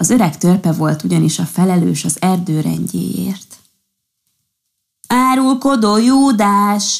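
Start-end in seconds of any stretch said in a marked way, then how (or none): 5.1-7.0 high, pitched-up accusing cry, "Júdás" drawn out. Green Pinecone answers the fairy's threat to tell on him, shouting. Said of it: "Kiáltott zöld toboz".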